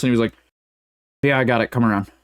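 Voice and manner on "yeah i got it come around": mock, imitated slurred speech. Retelling a drive-through order taken by a stoned worker: imitating slurred speech. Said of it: "very, like, slurred at us".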